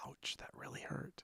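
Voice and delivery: barely-there, breathy whisper with almost no voice. Pointing a finger at a companion after being dug out: whispering. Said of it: "I just whisper".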